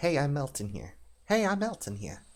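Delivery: put-on, high-pitched New York accent. Joking about a character's nonchalant exit wave, New Yorker accent. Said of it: "In a New Yorker accent".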